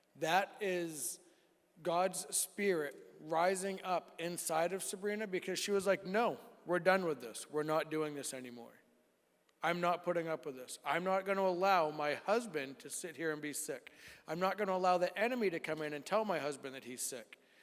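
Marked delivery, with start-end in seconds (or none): none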